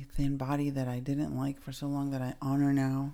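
normal talking voice

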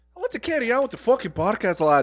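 put-on high-pitched Scottish accent, character voice. On a podcast, a co-host interrupts the story, Scottish accent. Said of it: "who knew that [name] was such a Scottish man?".

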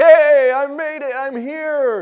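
acted-out excitement, booming, loud, high and drawn out. Telling a story of a man arriving in heaven: acting out someone all excited. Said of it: "And he's all excited".

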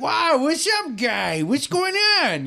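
very high, dopey, slow, swooping sing-song voice. Describing a comedy movie, imitating the lead's stupid voice. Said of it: "he has a stupid voice in it".

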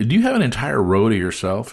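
plain

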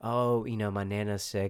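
ordinary talk

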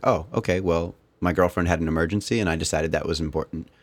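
ordinary talk, nothing marked

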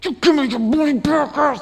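high, menacing, thuggish mob-style voice. Retelling a parable where a creditor chokes a servant: imitating a mafia-style threat. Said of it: "grabs this guy like he's in the mafia and starts choking him".

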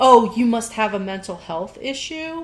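ordinary talk, nothing marked

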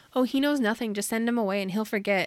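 ordinary talk

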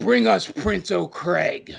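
slow, drawn-out, creaky, gruff orc growl.

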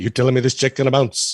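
streetwise wiseguy character voice. Showing how a cartoon character would say the line: Wise Guy voice. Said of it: "I think Wise Guy sounds a bit more like".

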